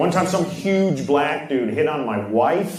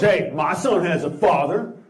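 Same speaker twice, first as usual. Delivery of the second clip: usual speaking voice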